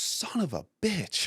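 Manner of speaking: mock shrill little-kid shout, very high, drawn-out. Retelling what a child yelled on the stairs: imitating a kid yelling. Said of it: "you yelled it".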